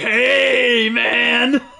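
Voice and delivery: creaky, rough, brutish orc growl, drawn-out "hey". Comparing voice actors, the speaker imitates how the orcs sound in an orc voice. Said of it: "And then you have the orcs, which are like".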